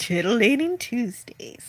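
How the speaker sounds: sultry, seductive, come-hither delivery. Plugging the Comic Relief Crusader, imitating how he says it in a sultry tone. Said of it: "I've never heard you speak in such a sultry tone".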